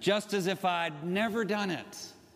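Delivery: put-on speaking in an Oklahoma accent.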